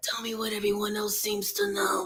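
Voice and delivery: wispy whispered voice. Repeating a man's line while the group talks about his voice, wispy whispered voice. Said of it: "Like his voice is so wispy".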